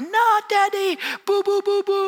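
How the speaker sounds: put-on very high, frantic, panicked crying of a child. A father retells his son skinning his knee, imitating a child's panicked crying. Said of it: "he just went into a panic of a cry".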